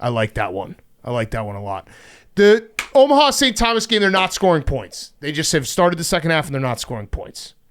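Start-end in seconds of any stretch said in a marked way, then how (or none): 2.3-5.1 high-pitched, loud yelling. Breaking into the conversation with a game update, yelling. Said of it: "Sorry to yell".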